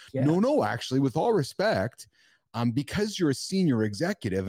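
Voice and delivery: play-acted, swooping, heavily sarcastic show of respect. Describing being ignored by senior executives, a speaker acts out a sarcastic reply. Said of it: "and I'm saying that really sarcastically right now".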